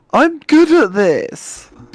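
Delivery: very high, loud, whining voice. In a game scene, a character boasts to the group in a whiny voice. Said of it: "He says in that whiny voice".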